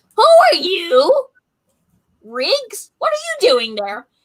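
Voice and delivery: nasty, mean, swooping goblin voice. Storyteller voices a goblin answering through a door peephole, mean goblin voice. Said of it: "He opens a sliding peephole and is like".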